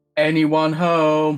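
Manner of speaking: very loud, high-pitched shout. Calling into an empty house in character: shouting in character. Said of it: "I just shout".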